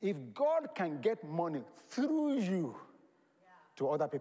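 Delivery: each word laid down deliberately, weighted. Speaker announces the next sentence will be slow, then says it very slowly. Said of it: "Let me say this very slowly".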